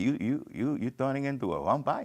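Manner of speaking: put-on Dominican-accented English. Retelling what Rafi, who ran the men's club, used to tell him: imitating Rafi's Dominican accent. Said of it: "He was Dominican".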